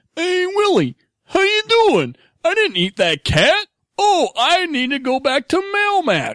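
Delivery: very high put-on voice with swooping, swinging pitch. Describing how the character sounds, in a talk about impressions: Alf impression. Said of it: "Alf sounds kind of like".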